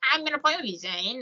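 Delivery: put-on hoarse giggly young boy voice. Retelling a tense scene from Living Dummy three: Slappy voice, giggly and raspy. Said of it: "He sounds like a giggling little boy, ... a raspy voice".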